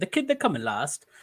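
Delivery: put-on tried-on British accent. Joking with others on stream in a British accent. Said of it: "That was a British accent".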